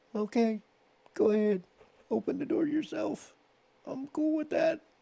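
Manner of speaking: very high, very loud squeak, rising. Telling how he answered his date after being nutted, retold high, squeaky voice. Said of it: "in my high, squeaky voice after having been nutted".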